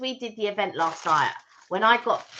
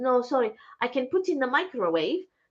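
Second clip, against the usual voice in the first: higher, apologetic shop assistant voice; 5 semitones higher than usual. Retelling what the woman at Gals answered, imitating the shop assistant. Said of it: "That's my impression".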